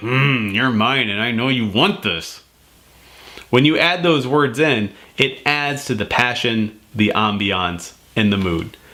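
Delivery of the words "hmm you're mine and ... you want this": voice with a growl, bedroom style. Showing how to talk to a partner in bed: growl in the voice. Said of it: "with that growl in the voice and be like".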